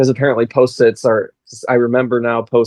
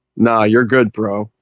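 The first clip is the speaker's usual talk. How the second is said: put-on robot voice. Picturing a Warforged speaking casually: Optimus Prime voice. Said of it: "the Optimus Prime voice saying".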